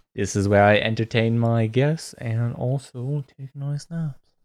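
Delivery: gentle, put-on British accent. Speaker showing a small home where the dining room doubles as a bedroom, in a soft British voice. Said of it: "What is that voice?".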